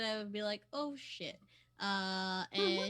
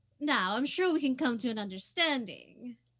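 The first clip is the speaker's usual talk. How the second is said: loud, raised, carrying voice; 8 dB louder than usual. Game master voicing a woman calling out to the party, louder voice. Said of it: "speak to y'all in like a louder voice".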